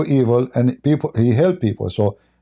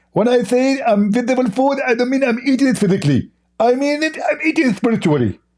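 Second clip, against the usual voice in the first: put-on voice, very high pitch; 11 semitones higher than usual. Telling someone that eating invisible food was meant spiritually, do a Zakir Naik voice. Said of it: "Can you can you do a Zakir Naik voice?".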